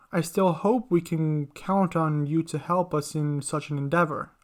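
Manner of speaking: plain reading voice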